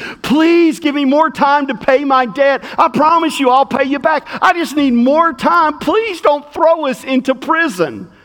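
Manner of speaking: put-on imploring, begging, pleading tone. Retelling a parable, acting out a servant begging for mercy. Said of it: "And he begs for mercy".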